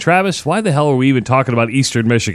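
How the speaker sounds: ordinary delivery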